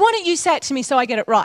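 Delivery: normal talking voice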